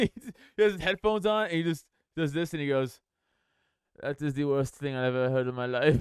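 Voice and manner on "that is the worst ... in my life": flat, emotionless, dead-level robotic monotone. Imitating the director reacting to a recording: imitating Werner Herzog's flat, emotionless voice. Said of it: "no emotion almost, like a robot".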